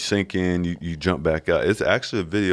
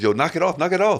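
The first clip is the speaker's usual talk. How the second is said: put-on yelling, very high-pitched; 11 semitones higher than usual. Retelling watching an Olympics game on TV: imitating yelling from the bench. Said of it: "yelling like I'm on the bench".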